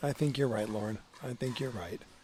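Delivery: reluctant, grudging, disappointed, let-down tone. Agreeing with the other speaker's point about a player, disappointed to admit she's right. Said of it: "you sounded so disappointed when you had to say I was right".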